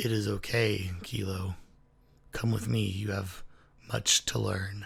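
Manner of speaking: voice dropped very deep and low. A voice speaks to kilo as if water fills her ear, very deep voice. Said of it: "in a very deep, deep voice".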